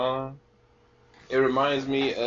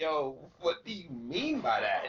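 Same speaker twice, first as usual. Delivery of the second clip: usual speaking voice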